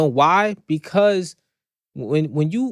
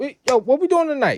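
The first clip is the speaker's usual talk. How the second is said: put-on excited, happy dog voice, higher pitch; 9 semitones higher than usual. Voicing a dog greeting its owner at the door: imitating a happy dog. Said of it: "your dog is that happy".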